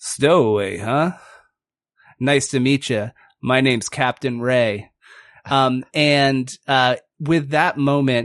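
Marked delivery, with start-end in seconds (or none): 0.0-4.9 pirate captain character voice. Voicing a peg-legged otter captain greeting a stowaway: Captain Ray voice. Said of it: "And he says".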